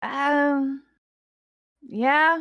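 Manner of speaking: guarded, aloof, careful words, high drawn-out "um". Voicing a character asked whether he had to fight: aloof character reply. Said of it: "kind of almost aloof".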